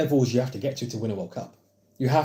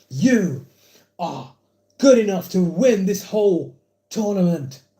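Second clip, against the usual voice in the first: put-on British online-creator voice, higher and louder; 8 semitones higher, 6 dB louder than usual. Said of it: "That's my K S I impression".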